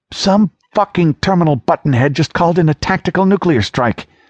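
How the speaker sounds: high-pitched, icy, cold fury held in check. A doctor answers the narrator's question about what happened at Evenfall, with cold restrained rage. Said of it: "There was a cold rage chained in the doctor's voice".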